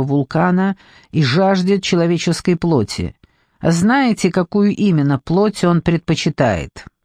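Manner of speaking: ordinary talk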